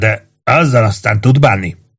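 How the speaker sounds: ordinary delivery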